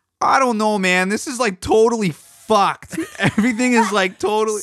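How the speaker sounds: very high, squeaked-up put-on rocker voice. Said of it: "I don't know if my impression will be good".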